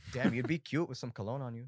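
loud, put-on saleswoman accent. Retelling a cologne saleswoman's pitch, imitating the saleswoman's accent. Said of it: "Why does she have that accent?".

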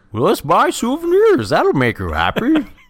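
very high, swooping cartoon dog voice. Asked to say the line you just said as Goofy: Goofy voice. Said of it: "Say that line as Goofy".

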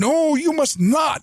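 very high, full-throated bellow. Cassini cuts Jamal off mid-sentence: Cassini bellowing. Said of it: "bellowed Cassini".

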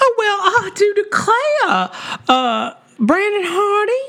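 very high, slow, sing-song Southern drawl. Reading supporter names aloud to finish the list: southern accent. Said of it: "we can finish 'em off that way".

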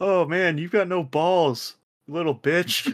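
mock loud, high-pitched shouted yelling. Recalling playing Call of Duty when parents got home, retelling yelling at the TV. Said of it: "I was yelling at the TV".

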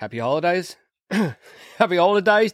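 put-on Australian accent. Podcast host wishing everybody happy holidays, slipping into an Australian accent. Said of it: "Did I just turn Australian there?".

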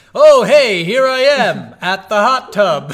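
very loud, high, drawn-out call. Retelling a game character calling out so others hear: imitating someone saying it loudly. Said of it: "how loud you say that just so they hear".

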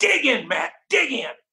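mock high-pitched screaming. Retelling how he screamed at Matt Pate during a knockout drill, re-enacting the scream. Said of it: "I'm screaming at Matt Pate".

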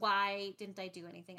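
ordinary talk

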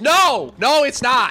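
play-acted, very slow, drawn-out emotional yell. Imitating another speaker's answer in a quick word game: imitating someone yelling no. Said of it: "emotional reaction".

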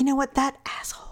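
soft, breathy whisper under the breath. Describing how their mom swears around them, acting out her whisper. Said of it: "She'll whisper it".

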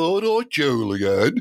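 put-on Birmingham (Brummie) accent. Trying out regional accents on the name Julian, Birmingham accent.

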